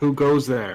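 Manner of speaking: big, loud, resounding booming voice. Hearing knocking through a bulkhead, calling out in a booming voice. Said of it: "I'll ask with my booming voice".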